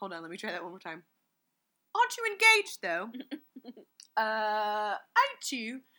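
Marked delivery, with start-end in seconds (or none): 1.9-5.8 deliberate put-on British accent, loud and slow. Retelling how a woman in a movie says her line, in a british accent. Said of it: "but in a British accent".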